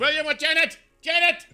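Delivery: piercing, very high, very loud shout. Retelling how a lady called out for William and Janet, retelling a lady's loud yell. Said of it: "Like she's yelling this as loud as she can".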